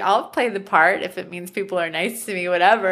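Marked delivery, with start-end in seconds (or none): none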